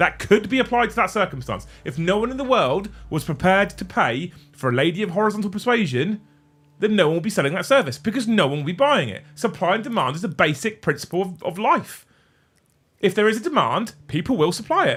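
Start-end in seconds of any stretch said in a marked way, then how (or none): 9.3-15.0 full-on loud, high-pitched, heated shouting. Arguing a point about supply and demand, shouting. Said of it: "you're shouting".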